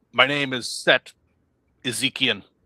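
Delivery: stern, firm, unbending tone. In a knighting ceremony, a player's character states the character's name in a stern tone. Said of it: "in a stern tone of voice".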